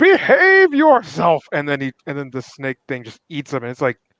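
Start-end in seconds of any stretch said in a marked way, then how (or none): 0.0-1.4 very high, shrill, loud, furious angry shriek. Recounting a scene before a snake thing eats him: retelling a scream. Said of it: "he's screaming like".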